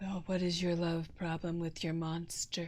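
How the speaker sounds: very low, deep radio host voice. Joking about a monster, imitating Delilah: Delilah radio host voice. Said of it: "It's Delilah".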